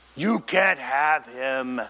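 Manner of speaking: very deep, slow voice, dropped several octaves. Retelling what the lady said, the speaker quotes her imitating a very deep voice. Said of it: "her voice dropped several octaves, ... talking in a very deep voice".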